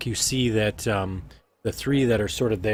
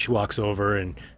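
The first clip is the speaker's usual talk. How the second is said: normal talking voice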